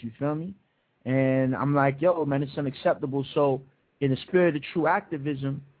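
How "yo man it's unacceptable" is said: ordinary delivery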